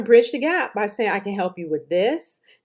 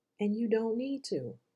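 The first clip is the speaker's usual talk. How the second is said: hushed, very soft delivery; 2 semitones higher, 11 dB quieter than usual. Showing practitioners a point in softer delivery: said real softly. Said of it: "Do you see how I said that real softly?".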